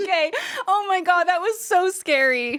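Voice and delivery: laughing so hard it's teary. Reacting to an embarrassing misunderstanding with friends: laughing to tears. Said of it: "I'm crying".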